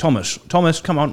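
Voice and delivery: well-to-do middle-class English dad voice. Telling a story about a friend, imitating how the friend's dad speaks. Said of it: "his dad speaks very, very much like this".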